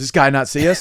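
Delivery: mock put-out, grouchy, grumbling voice. Retelling a wait at a crosswalk: imitating Willis being grumpy. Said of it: "Willis goes".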